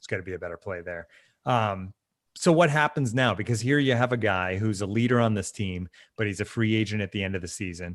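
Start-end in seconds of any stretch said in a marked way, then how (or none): 0.0-1.1 mock under-breath mutter, much quieter and lower. Retelling how a team leader called out a teammate, quoting a remark under his breath. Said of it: "it was kind of under his breath".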